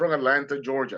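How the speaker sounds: normal talking voice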